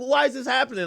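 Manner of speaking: high, weepy, sobbing, tearful crying. Retelling what an arrested woman said while crying: imitating someone crying. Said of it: "and she's crying".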